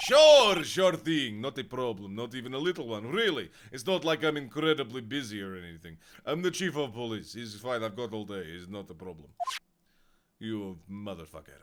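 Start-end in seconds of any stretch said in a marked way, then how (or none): 0.0-9.3 put-on sinister Russian accent, much lower. Voicing the chief of police asked to testify, sinister Russian voice. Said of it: "I gave him a really sinister Russian voice".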